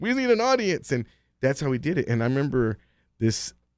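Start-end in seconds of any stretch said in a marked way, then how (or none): 0.0-0.9 put-on carnival barker's calling voice, pitched higher. Retelling calling out to passersby outside a comedy club: imitating a carnival barker's call. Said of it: "we're over there barking like".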